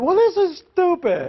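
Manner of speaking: put-on very high, cross, angry child's voice. Acting out how a kid might respond, imitating an angry kid. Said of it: "He could get mad".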